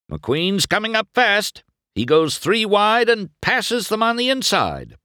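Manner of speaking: very high-pitched, thrilled, excited play-by-play voice. Bob, announcing the race, calls mcqueen's pass; excited race announcing. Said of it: "Bob announced excitedly".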